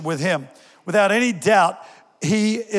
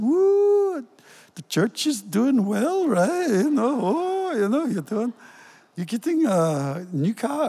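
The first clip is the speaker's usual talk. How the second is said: put-on thick Scottish accent, higher and slower; 4 semitones higher than usual. Retelling what a passenger said on getting into the car, in a thick Scottish accent. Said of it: "in her very thick Scottish accent".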